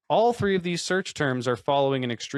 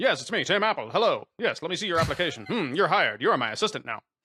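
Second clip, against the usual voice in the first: put-on old-timey showtune-style voice; 3 semitones higher than usual. Acting out a job interview at Apple: Guys and Dolls style voice. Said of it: "Like Guys and Dolls kind of shit".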